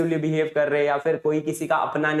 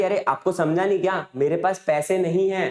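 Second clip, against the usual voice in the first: ordinary talk, nothing marked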